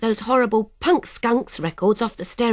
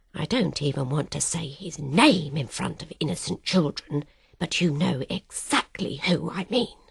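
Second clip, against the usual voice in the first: hushed voice, dropped even lower; 7 semitones lower, 6 dB quieter than usual. A narrator reads a woman speaking to Mum about someone; voice dropped even lower. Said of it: "drops her voice even lower".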